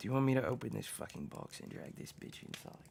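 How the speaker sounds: private, hushed, breathy whisper, very close. Player character walking over to another character, whispering in his ear. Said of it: "And that's what I whisper in Copernicus's ear".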